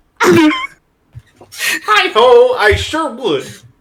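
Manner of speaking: belted out high in a puppet voice. Asked whether he'd like to be a deputy, answering in a fake Kermit the Frog voice. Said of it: "he starts doing a fake Kermit voice".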